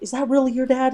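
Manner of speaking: high, excited, disbelieving, flipping-out outburst. Retelling a guy who saw the speaker: imitating someone flipping out. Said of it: "And he was flipping out".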